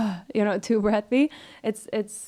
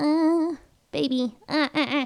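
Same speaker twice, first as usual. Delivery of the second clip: put-on very slow, high, high-larynx babyish coo; 5 semitones higher than usual. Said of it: "like the [name] baby voice".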